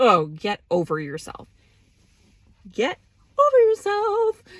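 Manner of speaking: loud, swooping furious rant, building as it goes. Ranting about people who call themselves queens: angry rant. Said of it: "I'm so angry and so filled with rage".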